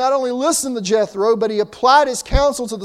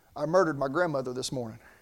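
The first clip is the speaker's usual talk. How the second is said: low, soft, rapid murmur under the breath. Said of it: "he murmured".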